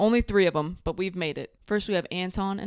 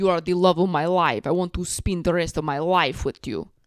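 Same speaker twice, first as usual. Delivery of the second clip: threatening put-on Russian accent. Joking that the Russian accent makes a love line sound threatening: put-on Russian accent. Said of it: "The Russian accent, terrifying".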